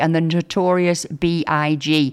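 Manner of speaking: plain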